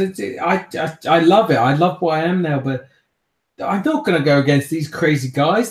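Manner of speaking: high, loud, panicked pleading voice.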